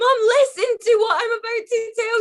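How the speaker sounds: frantic, high-pitched voice. Calling her mother from the Titanic, begging her to listen: hysterical. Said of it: "You sound hysterical".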